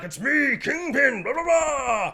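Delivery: grandiose shouted villain voice.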